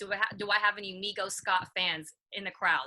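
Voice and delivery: plain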